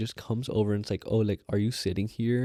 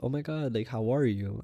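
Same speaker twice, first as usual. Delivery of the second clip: mock-flamboyant put-on voice, too strong.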